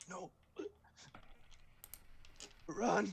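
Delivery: words gurgled out high while choking. Narrator voices the dying Trumbly gurgling a warning to the players: choking, gurgling voice. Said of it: "despite his choking, he gurgles out".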